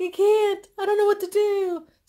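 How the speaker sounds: very high, very loud, sobbing, tearful pleading.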